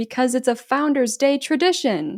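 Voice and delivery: ordinary delivery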